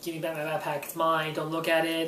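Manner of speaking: normal talking voice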